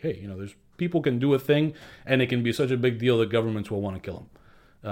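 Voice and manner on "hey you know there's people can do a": plain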